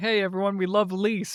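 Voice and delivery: sarcastic, mock-cheerful, fake-enthusiastic tone. Show hosts retelling how they greet Lise appearing, sarcastic mock enthusiasm. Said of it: "we sarcastically clap and be like".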